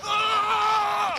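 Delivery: loud, high-pitched, pained yell.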